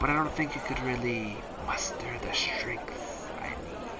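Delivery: slow, drawn-out, soft, hissing snake-like woman's voice.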